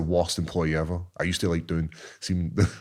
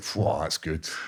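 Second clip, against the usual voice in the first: marvelling, admiring, impressed tone; 3 dB quieter than usual. Retelling looking at the egg-covered freezer: imitating himself marvelling. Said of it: "marvelling at it".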